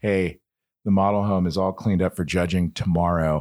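plain

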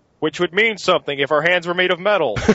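mocking heckler voice. Retelling a sci-fi movie scene, quoting the guys mocking it: impression of movie-mocking commentators. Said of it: "That was a pretty good impression".

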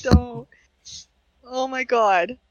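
tearful voice near tears, high and slow. Asked if they're okay, the speaker starts tearing up. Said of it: "I'm going to tear up now".

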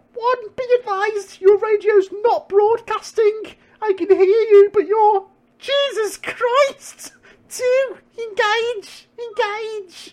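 throat squeaking, very high, very slow, strained. Reading an agent's radio lines during a firefight: squeaky strained throat. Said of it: "You can hear my throat squeaking".

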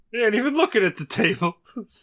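high, whiny voice on the verge of crying. Retelling what a dispensary vendor said as they passed, imitating someone near tears. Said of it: "You sound like he's about to fucking cry".

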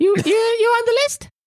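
tiny pixie woman voice, very high. Voicing a little pixie woman with a clipboard at the atrium: pixie woman voice. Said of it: "there's this little pixie woman with a clipboard".

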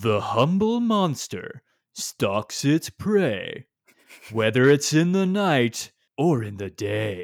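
slow, put-on storybook narrator voice. Doing an impression of the voice reading silly rhymes: put-on narrator voice. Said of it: "here's my impression".

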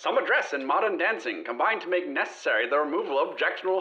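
1915-style newspaper-ad pitchman delivery. Taking a turn in a voice game, reading in a 1915 advert voice. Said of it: "do your best 1915 advert voice".

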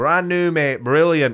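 put-on Barnsley accent. Retelling what a voice in the room said back, in a Barnsley accent. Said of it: "attempt at a Barnsley accent".

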